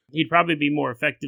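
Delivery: normal talking voice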